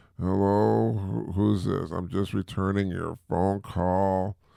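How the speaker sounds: groggy, half-asleep, just-woken-up voice. Showing how they sound returning a phone call half asleep, groggy. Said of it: "then I sound groggy like".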